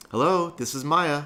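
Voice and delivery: high-pitched, put-on girl voice. Acting out a phone call, the speaker answers as Maya in a put-on girl voice. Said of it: "Both my girl voices sound exactly the same".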